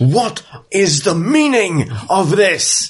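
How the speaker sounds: very high-pitched shout. Game master voicing an alchemist confronted in his laboratory, shouting. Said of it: "And he shouts".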